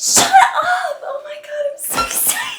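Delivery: high, loud, squealing excitement.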